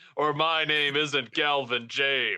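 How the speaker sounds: slow, gloating, taunting villain voice.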